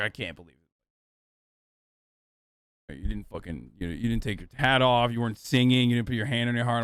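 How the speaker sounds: mock, half-serious, friendly, playful scolding tone. Retelling how a friend came over at the game: imitating a joking scolding. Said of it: "jokingly scolding me".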